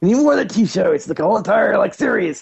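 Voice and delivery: mocking, sent-up impression of a man's voice. Mocking the other speaker's line about the Bigfoot shows: imitating the other speaker. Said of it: "is that your impression of me right there?".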